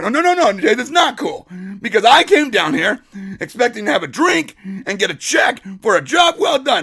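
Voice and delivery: angry, defiant outburst, growing heated. Retelling refusing to calm down, retelling an angry outburst. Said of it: "I got mad".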